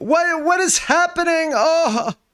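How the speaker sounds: very high-pitched shouting yell. In a game scene, the game master voices Sam, Sam yelling. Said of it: "you hear Sam yelling".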